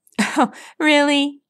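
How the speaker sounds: said through a snicker. Rainbow Dash hears the news about Scootaloo and snickers. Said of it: "Rainbow Dash snickered".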